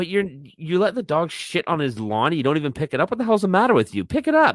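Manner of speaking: play-acted, high-pitched, berating scolding rant. Retelling how a boyfriend told his girlfriend off: imitating someone scolding. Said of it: "And he bitches her out".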